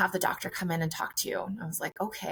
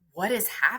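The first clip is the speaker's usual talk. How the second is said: put-on tearful, panicked crying. Retelling being told bad news by a doctor: retelling own crying. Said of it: "now crying".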